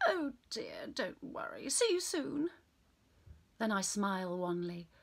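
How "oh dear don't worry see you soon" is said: put-on cut-glass English accent, higher. Retelling her fake phone call to hotel staff: cut glass accent. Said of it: "I'll say in a cut glass accent".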